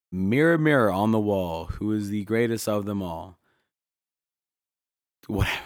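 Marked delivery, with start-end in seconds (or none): none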